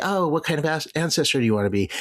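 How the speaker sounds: light-hearted, cheerful voice. Voicing the cheerful way people pose a question, in a playful impression of that tone. jovial, put on.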